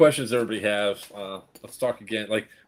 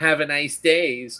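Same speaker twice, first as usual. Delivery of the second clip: play-acted sarcastic, snide, high, slow delivery; 5 semitones higher than usual. Retelling how a clerk said goodbye as they walked out: imitating a snide farewell. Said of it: "she does one of those snide".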